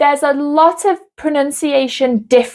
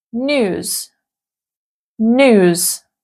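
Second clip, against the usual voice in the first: American "news" as "nooz", no y sound. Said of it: "it would be".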